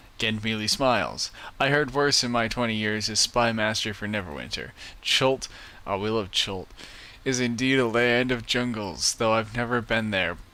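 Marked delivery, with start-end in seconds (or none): none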